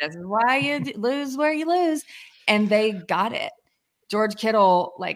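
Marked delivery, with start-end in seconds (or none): 0.0-2.0 put-on scream, higher. Retelling screaming from the couch at a risky fourth-down call: imitating own past screaming. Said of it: "sitting on my couch screaming".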